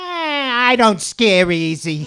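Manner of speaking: loud, shrill, curt voice, stretched "I". Imitating an aunt from the Bronx: Aunt B impression, loud and shrill. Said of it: "My impression of my aunt's voice is spot on. ... She's loud, she's shrill, and she's curt".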